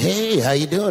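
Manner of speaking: weird, offbeat, strange manner. Retelling how an actor greeted him while acting weird: Andy Kaufman impression. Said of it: "acting like Andy Kaufman".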